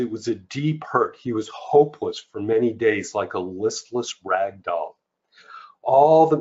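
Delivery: ordinary delivery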